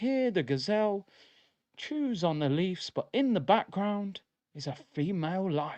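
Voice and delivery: calm, soothing, relaxed nature documentary narrator voice. Describing nature programs, imitating the narrator: David Attenborough voice. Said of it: "David Attenborough, he's just got the, the relaxing voice".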